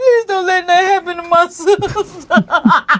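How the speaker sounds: slow, tearful, crying voice. Retelling her sister-in-law's reaction to hearing about her, imitating someone crying. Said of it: "She said I started crying like".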